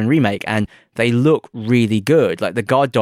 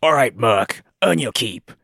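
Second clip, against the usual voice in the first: large, gruff-sounding voice. Quoting a game character telling Cloud to earn his keep: gruff Barrett voice. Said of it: "this big, gruff".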